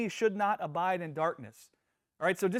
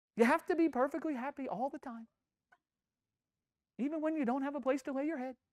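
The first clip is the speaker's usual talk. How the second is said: high, silly, funny put-on voice; 7 semitones higher, 4 dB quieter than usual. Showing how silly the advice is, in a put-on funny voice. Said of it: "I'm saying it with a funny voice".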